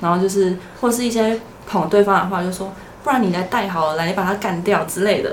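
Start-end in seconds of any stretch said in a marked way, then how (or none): none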